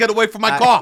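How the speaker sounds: high screaming outburst. Retelling screaming at pilots outside a hotel: retelling screaming at pilots. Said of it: "screaming at pilots".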